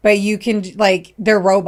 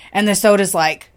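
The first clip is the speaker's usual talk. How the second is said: ordinary talk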